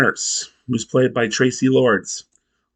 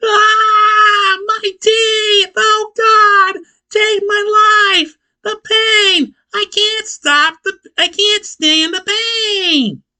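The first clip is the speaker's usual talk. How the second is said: put-on pain screaming, much higher and louder; 4 dB louder than usual. Retelling a man screaming alone in the garage while his family hears, imitating screaming in pain. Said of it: "hear him screaming".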